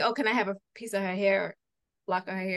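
ordinary talk, nothing marked

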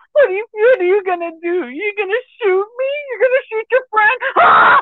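crazed, manic, very high taunting voice. Retelling a movie scene where the killer taunts her friend: imitating a manic crazy killer. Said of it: "a manic, crazy killer".

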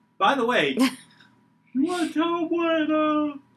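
talking through a yawn. Greeting the other host, yawning while talking. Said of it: "I can't hear you when you're yawning".

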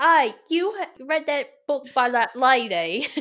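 put-on Cockney accent. Imagining a stranger on the street asking about a book, mock cockney chimney-sweep voice. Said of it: "you sound like the chimney sweep".

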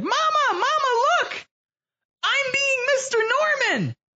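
put-on very high, shrill four-year-old child shout. Retelling what the speaker yelled to Mama at age four, yelling in a four-year-old voice. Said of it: "yelled as loud as I could with my 4-year-old voice".

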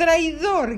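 piercing shout. A squirrel cries out in reply, a piercing shout. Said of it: "gritó la ardilla con voz penetrante".

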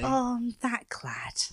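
put-on Cornish accent. Speaker, told she can do Demelza from Poldark, performs a Demelza impression, Cornish accent. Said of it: "You can do Demelza".

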